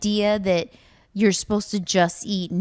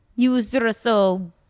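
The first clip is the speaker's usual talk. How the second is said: put-on bad Irish accent drifting into Russian; 3 semitones higher than usual. Retelling what a fighter said after losing, in an Irish accent sounding Russian. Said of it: "He said Russian".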